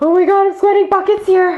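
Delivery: nervous, very high, panicked babbling.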